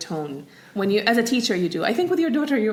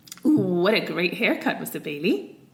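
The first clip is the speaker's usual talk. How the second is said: sarcastic, needling, insincere mock praise; 3 semitones lower than usual. Asked by the other speaker to give a sarcastic version: sarcastic. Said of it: "do a sarcastic version then?".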